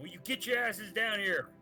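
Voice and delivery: shouting. Calling the others down from where they are, yelling up to them. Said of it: "I'll yell up from where I am".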